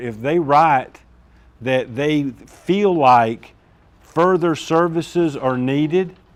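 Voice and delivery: slow, deliberate talking. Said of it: "so I'll talk slower".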